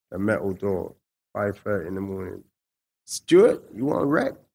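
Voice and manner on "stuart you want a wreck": put-on American accent. Retelling a guard calling through his cell door each morning in the hole, American accent. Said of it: "Give me your American accent now".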